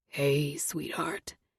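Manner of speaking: very deep, profoundly low voice. Reading a stranger calling out from his car window: profoundly deep voice. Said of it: "he says in a profoundly deep voice".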